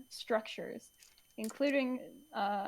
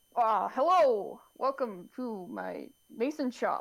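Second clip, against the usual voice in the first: put-on very slow elderly dwarf voice, hello stretched; 4 dB louder than usual. Voicing an old dwarven mason greeting visitors to his shop, old dwarf character voice. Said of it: "now I gotta come up with character voice".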